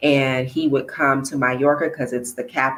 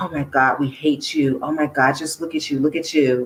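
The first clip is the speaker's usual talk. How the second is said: mocking, sarcastic tone. Speaker acts out what women sarcastically told them: imitating sarcastic women. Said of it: "in a sarcastic way".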